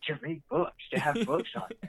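high-pitched, incredulous tone. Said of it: "Zach looks at him incredulously".

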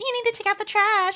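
very high, loud, whiny complaining voice. Retelling what someone said, the speaker quotes Jarrett in a mock-whiny imitation. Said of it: "everyone's whining every single voice".

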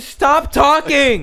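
very high, very loud furious screaming. Retelling how a 60-year-old man stood and yelled at a kid, retelling a man screaming. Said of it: "starts fucking screaming at this kid".

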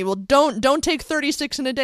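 acted shouting. Retelling what an angry pharmacist said: imitating someone yelling. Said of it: "she's yelling at me".

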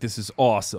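put-on, mock excited delivery. Retelling how excited he sounded: imitating someone excited. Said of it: "this is so exciting for him".

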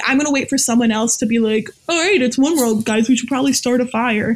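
usual speaking voice

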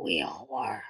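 very low mumble under the breath. A narrator reading fiction gives a character's line, muttered. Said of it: "Derek muttered".

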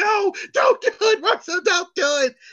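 put-on shrill, very high-pitched screaming. Recalling a manager screaming at the speaker to stop; imitating someone screaming. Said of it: "I remember hearing him screaming".

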